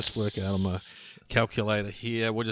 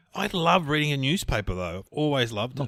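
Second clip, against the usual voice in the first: mocking, taunting put-on voice, sappy and gushing; 4 semitones higher than usual. Retelling how people mock a newspaper reader: mocking imitation of a newspaper fan. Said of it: "People mock you because they're like".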